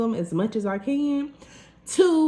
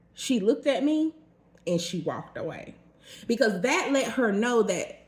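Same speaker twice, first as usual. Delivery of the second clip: normal talking voice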